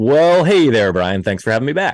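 broadcast play-by-play announcer delivery. A returning guest greets the host brian on the show in announcer voice. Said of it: "that's your announcer voice".

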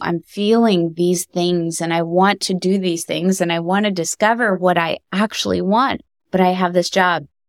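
ordinary talk

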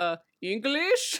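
strange, bad, bizarre put-on Russian accent. Retelling a scene where Michael answers in Michael's bizarre Russian accent. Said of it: "a very bizarre Russian accent".

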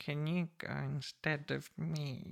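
tiny, shrunken, very small, hushed voice. Recalling asking a girlfriend to go instead after days indoors: retelling a very small voice. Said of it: "with a very small voice saying".

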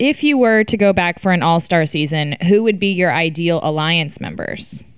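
ordinary talk

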